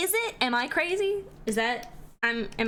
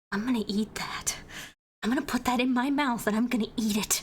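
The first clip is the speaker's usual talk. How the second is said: mock overeager, intense admiring tone. Imitating other artists complimenting the speaker's art: imitating an artist's overeager compliment. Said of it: "they're just like".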